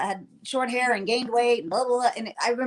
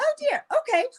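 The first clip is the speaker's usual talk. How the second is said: put-on polite voice, higher. Retelling how Kate, the costume designer, reacted at a fitting: imitating Kate's polite tone. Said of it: "she was so polite".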